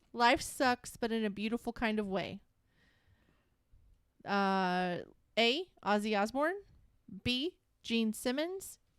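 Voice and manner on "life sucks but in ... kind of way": ordinary delivery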